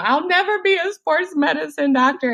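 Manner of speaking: high, falling-apart breakdown wail. Retelling own earlier breakdown about a career goal: imitating own past breakdown. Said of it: "I had another breakdown on some".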